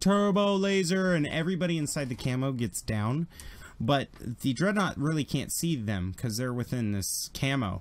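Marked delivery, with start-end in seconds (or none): 0.0-1.1 mock shrill, very high, blaring air-horn yell. A game narrator voicing a character warning those inside the camo: loud air-horn shout. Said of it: "He's just loud".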